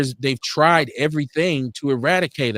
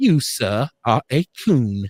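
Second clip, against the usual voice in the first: slow, drawled mock English accent. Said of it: "That was my English accent".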